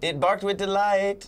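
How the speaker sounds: high-pitched, fake, put-on Jamaican accent. Repeating the joke's punchline when asked for Jamaican: put-on Jamaican accent.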